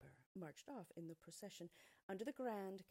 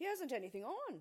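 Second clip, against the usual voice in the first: slightly louder, slightly higher pitch; 8 semitones higher, 8 dB louder than usual. In a crowd, someone repeats a child's whispered words, a bit louder. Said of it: "a bit louder".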